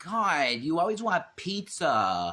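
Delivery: put-on high-pitched valley girl voice. Speaker notices she sounds like one and leans into it: valley girl voice. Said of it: "I sound like a like a valley girl".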